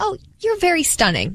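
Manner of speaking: high, genuine, sincere, harmless tone. Showing how a man sounds when sincerely complimenting a woman: genuine, harmless compliment tone. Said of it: "See that tone? Harmless".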